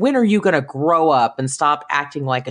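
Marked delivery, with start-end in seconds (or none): none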